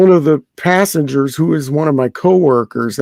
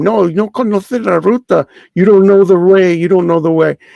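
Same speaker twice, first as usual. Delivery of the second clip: play-acted heated, angry scolding and screaming, Spanish then English; 4 semitones higher than usual. Retelling a woman accusing a taxi driver of a scam, imitating a woman screaming. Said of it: "she was screaming at him".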